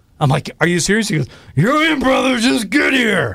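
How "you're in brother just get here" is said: rough, gravelly rock-radio pal voice, higher pitch. Retelling a former coworker insisting on the phone that he come to the game, in a gravelly voice. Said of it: "He had this real gravelly voice".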